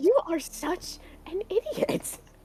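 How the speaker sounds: utterly bewildered. A woman tells the man who wants to fight beside her what she thinks: baffled. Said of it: "She's she's like so baffled".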